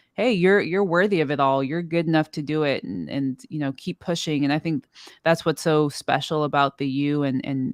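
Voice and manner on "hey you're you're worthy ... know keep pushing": plain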